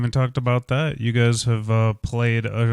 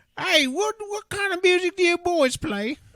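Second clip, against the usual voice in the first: put-on old lady voice, much higher pitch. Pretending to be an old lady approaching the boys on the street, old lady voice. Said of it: "you gotta get into your accent".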